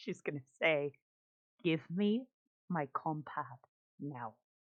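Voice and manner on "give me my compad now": really quiet, livid, pointed voice. Confronting someone after poking his chest: really quiet voice. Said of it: "In a really quiet voice".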